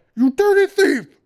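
shrieking in a very high, loud falsetto. A narrator reads a character accusing another man of theft: high falsetto shriek. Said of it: "came out in a high falsetto shriek".

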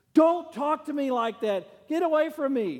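very high, shrill, loud yelled outburst. Retelling how a runner answered her husband mid-race: imitating someone shouting. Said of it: "she shouted at me".

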